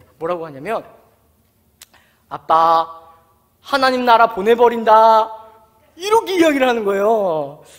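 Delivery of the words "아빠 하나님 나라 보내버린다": loud, slow, deliberate, threatening tone. Retelling a daughter's sudden reply: imitating a daughter's threat. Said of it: "하연이가 갑자기 이러는 거예요".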